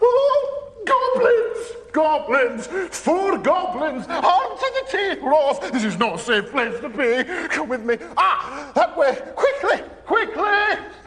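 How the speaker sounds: very high-pitched, scared, panicky chatter. Voicing a character who grabs Ross's arm and hurries him along, in a very high-pitched voice. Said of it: "talking in a very high pitched voice".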